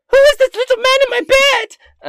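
very high, very loud, rushed, shrill shriek. Game master voices someone screaming in the middle of the night, screaming. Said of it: "you hear someone scream".

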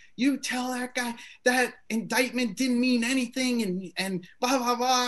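high-pitched screaming. Retelling overhearing Jim on the phone: imitating Jim screaming.

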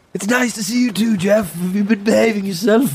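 high-pitched, terrifying, fearsome royal voice. Voicing Krampus greeting a player: Prince Philip voice. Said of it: "Sounds more Prince Philip now".

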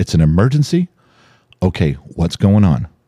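ordinary talk

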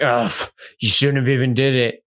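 acted-out, snarky, passive-aggressive tone. Retelling a dispute over the dishes: imitating passive aggressive remark. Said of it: "the passive aggressive".

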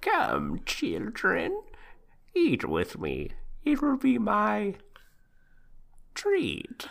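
high, sing-song put-on enchantress voice. Repeating a character's quoted line from a story: witch from Narnia voice. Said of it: "Why'd you make it sound like the witch from Narnia?".

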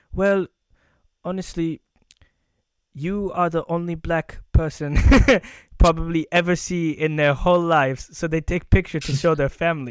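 put-on shy, meek, timid young boy voice. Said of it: "this really like timid young Korean boy".

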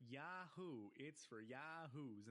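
put-on drawling accent. Describing a tv episode, quoting the kid's line for the drink: drawl. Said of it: "he speaks in a drawl".

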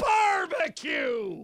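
mock, very high, shrill, furious yell. Retelling how someone screamed at Mason before air: mock-angry scream of barbecue. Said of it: "you just screamed at her in a very angry voice".

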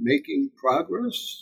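dry, knowing remark. Speaker recalling a man who found him away from his lab, retelling his wry remark. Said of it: "with this kind of wry smile".

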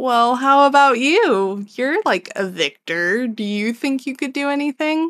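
acted, high, sarcastically snooty tone. Retelling how one of the guys taunts another, in a mock-snooty sarcastic tone. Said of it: "very like sarcastically snooty Lee is like".

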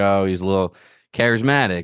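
ordinary delivery

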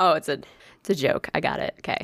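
ordinary talk, nothing marked

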